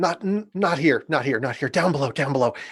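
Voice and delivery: soft, hushed half-whisper, words repeated. A woman on the stairs pulls you aside, half-whispering. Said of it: "And she whispers".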